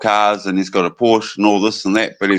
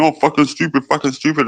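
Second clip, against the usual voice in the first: repeated, high, put-on tic blurts; 6 semitones higher than usual. Retelling how someone fakes outbursts for donations: imitating someone faking Tourette's tics. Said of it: "say they've got Tourette's when they don't".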